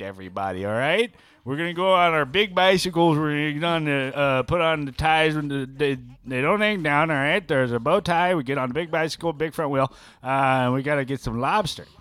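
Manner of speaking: heavy, exaggerated New England accent. Doing a bit for the other speaker, exaggerated Kennedy New England accent. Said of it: "That's your New England impression".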